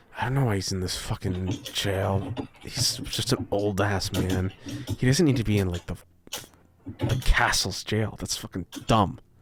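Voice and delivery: muttering under breath. A game master voices a guard muttering as he walks away: faint muttering. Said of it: "the faint muttering of him going".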